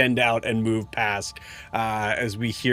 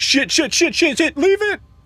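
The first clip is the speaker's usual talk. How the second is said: very high, rushed, frantic, panicked yelling; 7 dB louder than usual. Voicing a fleeing figure in a game scene: yelling in panic. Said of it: "a male figure just yelling".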